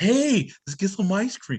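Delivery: put-on creepy uncle voice. Imitating how an actor sounded in a scene: imitating Lil Meech as creepy uncle. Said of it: "He sounded like a pedo".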